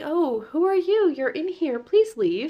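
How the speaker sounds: very high, wooden, calm, unbothered bad acting. Retelling an actress finding an intruder in her bathtub, imitating a calm, unbothered reply. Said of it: "anyone else would have screamed or freaked out".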